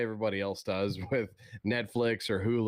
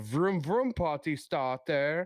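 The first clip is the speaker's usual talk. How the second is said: put-on German accent, pitched higher; 6 semitones higher than usual. Retelling a remembered ad line: imitating Conan's German accent. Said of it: "he was doing it in a German accent".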